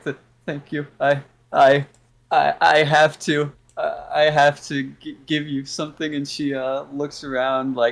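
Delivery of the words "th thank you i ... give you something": faked crying, stuttering, stammering put-on tearful voice. Voicing a crying character thanking the players: put-on crying voice. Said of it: "she's crying. She's like".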